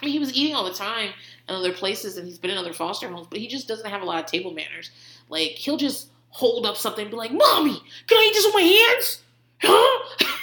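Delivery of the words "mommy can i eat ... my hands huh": put-on very high, demanding, aggressive little-child voice. A foster parent retells her foster son asking at the table, imitating an aggressive child. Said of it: "aggressive way of talking all the time".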